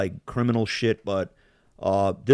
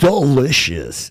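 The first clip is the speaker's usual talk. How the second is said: loud, high-pitched video game announcer voice; 5 semitones higher, 7 dB louder than usual. Talking about a friend who plays Candy Crush at max volume: Candy Crush announcer voice. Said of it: "I did the voice of the soda fucking crush".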